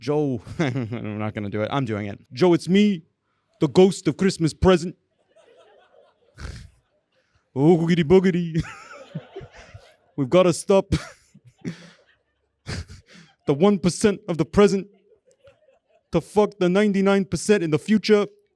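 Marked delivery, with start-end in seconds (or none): 2.3-18.3 rough put-on politician voice. Addressing Joe as the ghost of Christmas present: Bernie Sanders voice. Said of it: "this sounds like, but not exactly like your colleague Bernie Sanders".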